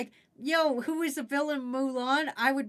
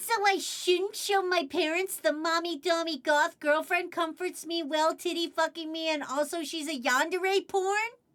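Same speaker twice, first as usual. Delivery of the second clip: dumb, silly, stupid-sounding mocking put-on voice; 3 semitones higher than usual. Mocking Worm by reading his question back, in a Worm voice. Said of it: "I'll do it in a stupid voice too".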